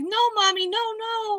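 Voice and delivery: put-on, high, drawn-out crying, pleading little child. Speaker retells a child upset that a lobster will die, imitating a screaming child. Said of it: "they are screaming like".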